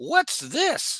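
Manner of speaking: strange, very high-pitched alien voice. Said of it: "but with a weird voice".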